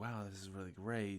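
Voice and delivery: plain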